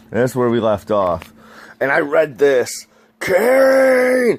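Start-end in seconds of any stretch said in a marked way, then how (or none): 3.1-4.3 very high, booming nineties cartoon-hero shout, long stretched word. Reading a character's name aloud from a story, Spider-Man cartoon voice. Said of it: "I'm reading that in the freaking nineties Spider-Man uh, cartoon voice".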